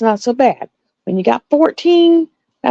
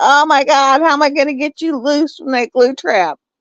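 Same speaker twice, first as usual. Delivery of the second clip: mock-panicked, acting out freaking out; 2 semitones higher than usual. Retelling the cat snatching a glue-trapped mouse with its face, acting out own panic. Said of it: "I was like freaking out".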